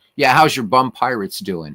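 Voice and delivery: mock teasing tone in New York accent. Speaker retells how a New Yorker used to kid him about baseball: imitating a teasing New Yorker. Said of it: "he'd always kid me. He's a New Yorker".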